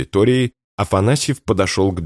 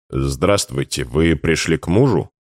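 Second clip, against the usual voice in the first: ordinary delivery, nothing marked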